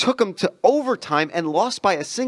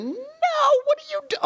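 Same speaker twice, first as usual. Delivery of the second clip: very high yelp, broken off midway. Retelling own reaction to a long jumper: imitating own scream. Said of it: "I'll scream in my office chair".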